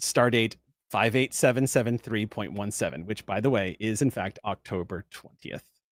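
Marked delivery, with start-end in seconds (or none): none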